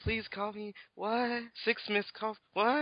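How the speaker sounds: oddly read-out, weird, slow, high-pitched delivery. Mocking how a game character read a text: imitating weird text reading. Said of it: "Why are you reading like that?".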